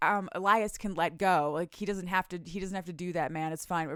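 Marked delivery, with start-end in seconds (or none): none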